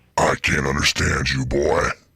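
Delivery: put-on demon voice. Playing a demon on a radio call with a caller: demon voice. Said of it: "I put together my voice to sound like a demon".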